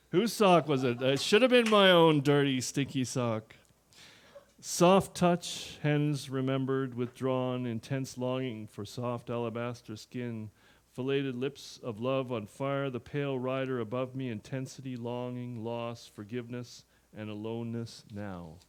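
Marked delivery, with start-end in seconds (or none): none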